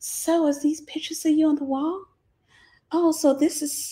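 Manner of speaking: coy, flirty voice with hissing s sounds. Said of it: "she would put a sss in her voice".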